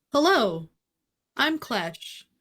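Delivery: cheerful, upbeat, high, swooping put-on voice. Playing a character greeting a table while looking for a contact: upbeat in character. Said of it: "Hazel and Clash are just so upbeat".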